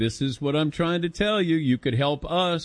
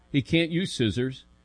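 usual speaking voice

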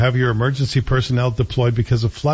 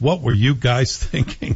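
words spoken through laughter. Addressing the mayor about the fireworks, laughing while speaking. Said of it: "I can't say that without laughing".

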